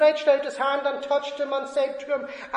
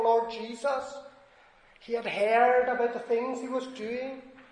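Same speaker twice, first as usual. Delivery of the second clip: ordinary talk, nothing marked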